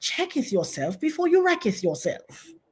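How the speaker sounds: upper-class British English accent. Repeating a saying for a joke: mock Queen's English. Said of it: "in the Queen's English".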